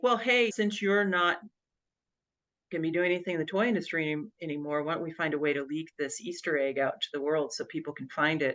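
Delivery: normal talking voice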